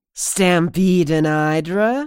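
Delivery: put-on slightly slurring voice. A woman at a corpse's saddlebag asks the narrator a question, strange, slightly slurring voice. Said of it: "in a strange, slightly slurring voice".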